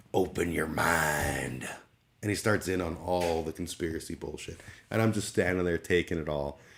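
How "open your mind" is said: play-acted irritated, aggressive, "mind" drawn out. Retelling a confrontation with an aggressive man: imitating an angry man. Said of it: "He turns with his angry face on".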